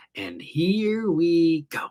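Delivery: very slow, drawn-out villain voice. Streamer reading out a chat message, Joker voice. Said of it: "in his best Joker voice".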